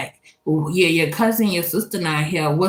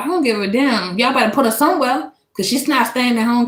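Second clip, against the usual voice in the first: fast, high-pitched, angry rant rattled off; 7 semitones higher than usual. Retelling what the father figure told the school staff: imitating him talking fast when mad. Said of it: "when he get mad, he talk fast".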